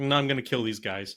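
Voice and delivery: ordinary talk, nothing marked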